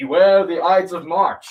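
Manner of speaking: loud, slow, bellowing yell. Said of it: "this man yells".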